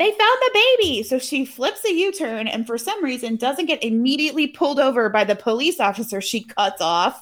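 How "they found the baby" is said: very high-pitched, shrieking scream. Recapping a story, the speaker acts out the mom screaming. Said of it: "she's screaming".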